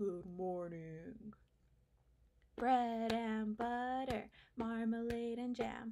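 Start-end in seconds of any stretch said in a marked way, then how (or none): 0.0-1.1 very low, deep, bottom-of-the-range voice. Leading a group in saying good morning, as low as possible. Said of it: "as low as we can".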